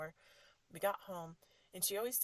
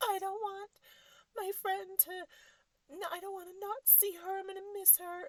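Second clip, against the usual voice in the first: put-on very high, tearful crying child voice; 13 semitones higher, 4 dB louder than usual. Retelling a daughter crying in the car: imitating a crying child. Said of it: "she's just crying and crying".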